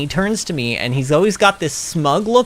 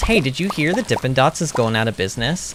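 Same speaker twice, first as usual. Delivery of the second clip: put-on dead-serious delivery. Retelling what he asked her at the movies, retelling a deadpan question. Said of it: "deadpan, dead serious, and he goes".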